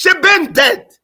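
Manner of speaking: very loud, high, put-on Jamaican accent. Telling a family story and switching into a jamaican accent. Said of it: "In my Jamaican accent".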